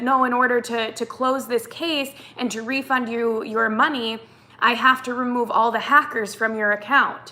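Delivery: normal talking voice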